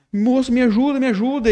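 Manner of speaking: very high, crying, tearful voice. Retelling a client's call at night: imitating a crying caller.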